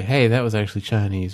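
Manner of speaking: ordinary talk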